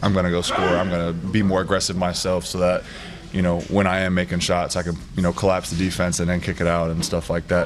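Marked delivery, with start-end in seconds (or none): none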